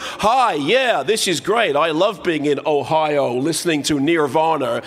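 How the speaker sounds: put-on smooth, native-sounding, perfect American accent. Describing a secret russian family talking to americans, perfect american accent. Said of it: "they speak with perfect American accents".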